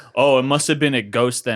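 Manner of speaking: very loud, heavy, acted sarcasm. Retelling what a man said after being told the iv wasn't pulled out, mock-sarcastic retelling. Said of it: "in a very sarcastic way".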